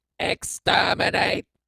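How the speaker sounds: very high, creaky, rough, ring-modulated rasp. Demonstrating a ring modulation effect on a voice: Dalek voice. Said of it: "Daleks, we are the Daleks".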